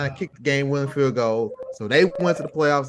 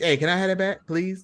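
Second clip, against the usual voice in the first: mock pleading, higher pitch; 5 semitones higher than usual. Retelling a coach asking the refs for a timeout back: imitating someone begging. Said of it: "I saw him over there beg".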